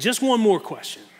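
put-on heavy, laid-on thick New York accent. Recalling a man who questioned candidates, quoting him in a thick New York accent. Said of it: "he had this thick New York accent".

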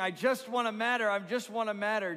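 high-pitched, loud, desperate pleading voice.

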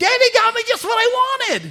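put-on very high, tiny small-boy voice. Retelling a three- or four-year-old hammering for the camera, high little kid's voice. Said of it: "High little voice".

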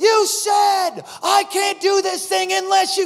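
imitated shrill yell. Retelling a prophet calling the speaker out from the stage: imitating Cindy Jacobs yelling. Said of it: "a shrill voice and full of fire".

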